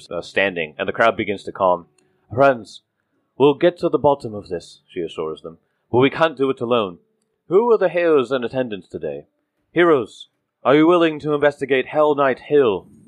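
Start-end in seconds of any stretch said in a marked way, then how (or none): 2.3-12.8 authoritative put-on voice, higher. Voicing Greta calming the crowd: authoritative Greta voice. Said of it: "in an authoritative".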